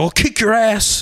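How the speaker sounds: very high, angry, in-your-face yell. Retelling how a stepmom yelled at an eleven-year-old: imitating someone yelling. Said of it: "And then she started yelling at me".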